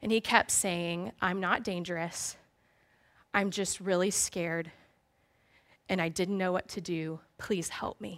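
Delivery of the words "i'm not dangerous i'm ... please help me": sobbing, begging, pleading voice. Retelling the frightened young man's plea: imitating someone sobbing. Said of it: "He was sobbing and he was shaking".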